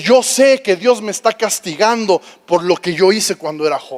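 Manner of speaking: ordinary talk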